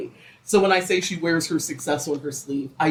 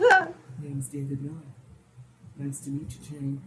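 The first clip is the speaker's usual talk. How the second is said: put-on charming voice, quieter; 7 dB quieter than usual. Retelling how David introduces himself to Jane: David's charming voice. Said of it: "David put on his best charming voice".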